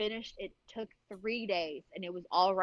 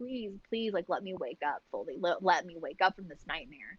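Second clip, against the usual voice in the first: put-on imploring, repeated begging. Retelling begging the mother to wake up: imitating own past begging. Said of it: "begging her".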